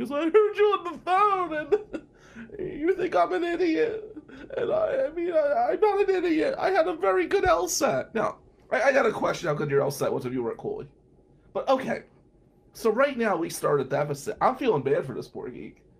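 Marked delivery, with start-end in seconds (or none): 0.2-8.1 put-on very high, slow tearful voice, "phone" stretched. Retelling what a crying roommate said after overhearing a phone call: imitating someone crying. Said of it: "why are you crying?".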